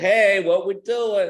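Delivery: play-acted angry, loud, drawn-out delivery. Retelling how a wife got mad about church giving: imitating an angry wife. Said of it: "and she got mad, said".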